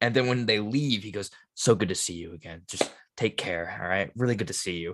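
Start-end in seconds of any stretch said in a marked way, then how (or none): 1.5-4.9 warm, calm put-on voice, somewhat quieter. Imitating Tom Cruise saying goodbye after interviews: warm Tom Cruise impression. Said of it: "so warm".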